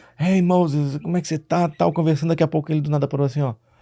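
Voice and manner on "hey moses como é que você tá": put-on Portuguese spoken in a strong American accent. Retelling a young man's greeting: imitating American-accented Portuguese. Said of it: "aquele sotaque, né, da, português com sotaque americano".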